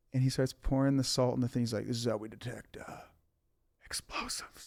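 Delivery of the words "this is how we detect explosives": very quiet, soft, hushed whisper. Retelling what a man told him while showing a salt test, retold whisper. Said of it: "And he whispers it to me".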